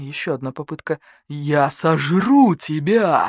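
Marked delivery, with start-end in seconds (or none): 1.3-3.3 menacing, frightening predator-like voice. Narrating the story, the reader gives the badger's line to the starling in a scary voice. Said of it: "страшным голосом произнес барсук".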